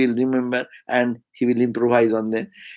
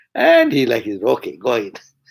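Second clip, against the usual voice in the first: normal talking voice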